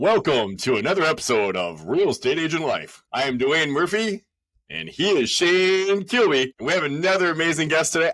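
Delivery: loud, high on-air radio announcer voice. Opening the episode and introducing both hosts and the guest: radio announcer voice. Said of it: "I love doing this radio voice".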